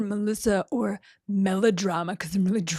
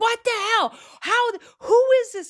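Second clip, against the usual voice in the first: play-acted outraged yelling, very high-pitched; 5 dB louder than usual. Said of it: "I yelled".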